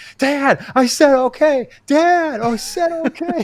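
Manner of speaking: put-on very high, loud, frightened, panicked little-kid call. Retelling hearing a 7-year-old call for his dad, imitating panicked young Luke. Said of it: "then I hear panic from like a 7-year-old".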